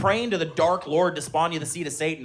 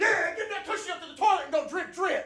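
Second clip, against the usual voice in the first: very high, excited, acted-out hype-man cheering. Retelling echoing his wife to his kids: imitating his own hype-man cheering. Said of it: "I'm a hype man".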